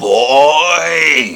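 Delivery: put-on very loud bellow, "boy" dragged out. Answering his favourite word as said in Phantasm, Angus Scrimm impression. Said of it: "that's my impression of Angus Scrimm, the tall man".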